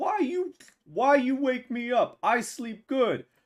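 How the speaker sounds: very high, shrill, angry monster yell. Voicing a creature woken by thumping, yelling: imitating a creature yelling. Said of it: "another one comes out and starts yelling".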